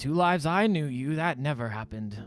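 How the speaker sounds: put-on old man character voice. Voicing an old man who squints at a player and recognises him: old man character voice. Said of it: "And he goes".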